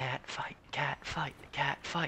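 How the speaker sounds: very quiet, very small, high-pitched whisper. A voice from the railing at the side of the players, very small whisper. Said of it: "you hear a very small voice, just kind of very quietly ... just whispering".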